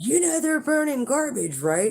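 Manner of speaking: yelled out, pitch very high. Retelling how John came over: imitating someone yelling. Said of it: "he starts yelling at me".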